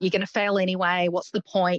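ordinary talk

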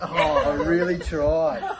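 soft, high, fighting back laughter, giggling.

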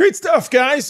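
little crack, voice pitching up. Host wrapping up a segment with the guys; voice cracking. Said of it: "A little voice crack there".

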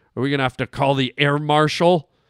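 ordinary talk

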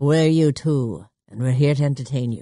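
showman's stage announcer voice, headliner-style. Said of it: "That's your [name] impression?".

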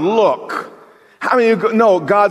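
exasperated, put-out, slightly angry grumbling. Retelling how a man frustrated with God's timetable speaks to God, imitating slight anger. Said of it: "He's a little bit angry".

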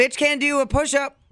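shouting. Commenting during a conversation with another speaker: yelling. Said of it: "What are you yelling at me for?".

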